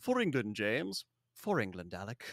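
put-on very posh, laid-on-thick English accent. Retelling a film scene where two spies trade their phrase: posh English accent as Sean Bean. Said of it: "just posh as posh can be".

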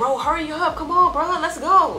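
high, loud, impatient urging tone.

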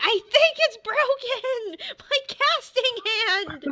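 very high, drawn-out howl of agony. A game master voices a character whose hand a hammer just smashed: yelling in pain. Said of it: "And he starts yelling".

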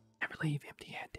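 gravelly whisper. Trying out a voice for a game character: gravelly whisper voice. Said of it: "Gravelly whisper voice".

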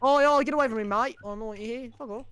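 put-on Australian accent, very high. Speaking to Frank, the speaker uses a stereotypical Aussie accent. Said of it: "you get him with that stereotypical Aussie accent".

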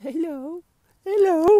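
squeaky puppy voice, very high and very loud. Out walking his dog, the speaker answers for it in Chabba's voice. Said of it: "That was my dog voice".

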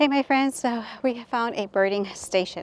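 winded, breathless, puffing between words. After climbing a trail, greeting the audience at a birding station while out of breath. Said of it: "I am out of breath".

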